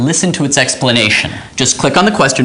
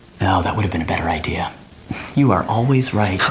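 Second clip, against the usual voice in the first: hushed whisper, lower and quieter; 5 semitones lower, 6 dB quieter than usual. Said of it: "we don't want to get into trouble".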